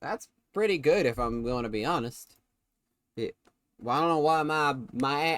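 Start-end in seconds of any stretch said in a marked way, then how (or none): 0.0-2.4 lowered voice slipping into Southern accent. Commentating a football game, slipping into a southern accent. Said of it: "my voice turned into in a southern accent".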